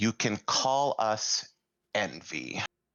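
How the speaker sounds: resonant voice, resonating as if inside the head. Narrating a creature that speaks into everyone's heads, in a booming voice. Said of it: "this booming voice, this resonating voice speak in all of your heads".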